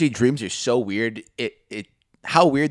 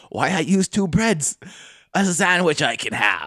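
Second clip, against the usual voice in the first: strange pirate-style voice; 4 semitones higher than usual. Retelling a moment friends laughed at, the speaker talks like Jack Sparrow. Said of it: "Are you Jack Sparrow? Why are you talking like that?".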